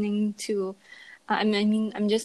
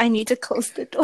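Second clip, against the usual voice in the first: plain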